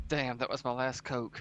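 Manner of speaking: put-on muttering under the breath. Describing someone turning around to get the wagon; retelling a mutter under breath. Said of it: "he's like under his breath".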